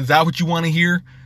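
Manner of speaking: put-on sarcastic, irritated, snarky tone. Retelling a player's answer to a reporter after a loss: imitating a snarky reply. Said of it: "a snarky kind of way".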